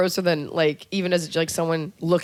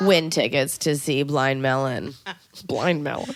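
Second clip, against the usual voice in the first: salesy radio DJ tone; 3 semitones lower than usual. Joking that the speaker sounds like a K-Rock DJ: put-on rock radio DJ voice. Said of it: "Don't I sound like I D J for K-Rock".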